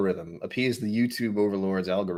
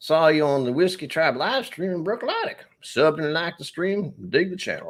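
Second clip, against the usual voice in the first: higher-pitched put-on Mississippi accent; 8 semitones higher than usual. Reading a viewer's chat message aloud: put-on Mississippi accent. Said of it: "I'm gonna do it in an accent now".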